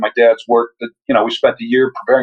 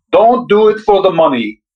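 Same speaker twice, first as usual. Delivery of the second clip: terrible put-on Hungarian accent, pitched up; 7 semitones higher than usual. Quoting one of their father's expressions for the interviewer: terrible hungarian accent. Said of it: "I'll do my terrible Hungarian accent".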